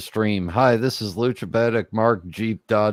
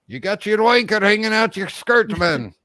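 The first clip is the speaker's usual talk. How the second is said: bad, very high, put-on Scottish accent; 11 semitones higher than usual. Retelling a house story about Jock, speaking in a bad Scottish accent. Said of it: "can't do a Scottish accent".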